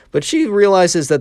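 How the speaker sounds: voice breaking mid-phrase, cracking up high. Telling a story about Mary, voice cracking mid-sentence. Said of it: "voice crack".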